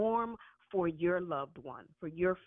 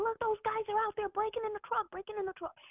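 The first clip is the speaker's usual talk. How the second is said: mock scream, much higher. Retelling what a hallucinating woman screamed from the window, imitating someone screaming. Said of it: "she's screaming".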